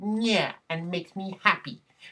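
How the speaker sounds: eager geek voice. Discussing a comic book's continuity, speaking in the speaker's own geek voice. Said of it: "That's actually my geek geek voice".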